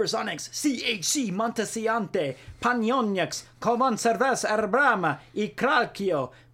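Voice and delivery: put-on Spanish accent. Listing sports team names, the speaker reads them in a spanish accent. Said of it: "I used a Spanish accent on five different teams".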